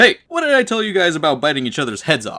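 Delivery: loud, swooping, scolding parent-like yell. Retelling a comic where Peter Parker yells at fighting demons: imitating a parent yelling. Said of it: "he yells just like a parent trying to calm down his kids".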